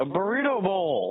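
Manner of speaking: very high-pitched, sudden shouted outburst. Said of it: "you don't have to yell at me".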